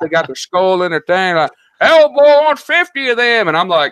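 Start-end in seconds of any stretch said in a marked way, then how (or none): 1.8-3.5 put-on drawling Southern accent, very high and slow. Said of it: "You like my Southern accent?".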